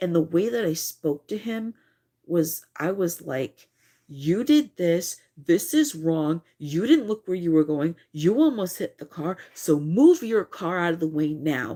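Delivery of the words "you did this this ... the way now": loud, stern, firm motherly scolding tone, acted. Retelling telling off a driver who almost hit a car: retelling a mom-tone scolding. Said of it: "I mama bared him with the mom tone".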